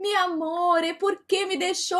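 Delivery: put-on Portuguese-Spanish mixed accent. Retelling the dead man's lover speaking to him; put-on Portuñol accent. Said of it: "num portunhol".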